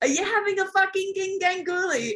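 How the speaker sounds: very high, mocking, called-out yell. Retelling someone yelling up from down on the rocks during a task, retelling a yell. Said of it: "Ant down there yelling out".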